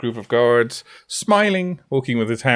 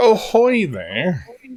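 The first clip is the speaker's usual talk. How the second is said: loud shouted call, high-pitched; 7 semitones higher than usual. Voicing a commander calling up to a ship: shouting a greeting. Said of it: "and he shouts up".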